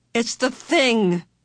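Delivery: crying out the words suddenly. Charles Wallace speaks up to Meg and Mrs. Witch, crying out. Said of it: "Charles Wallace cried".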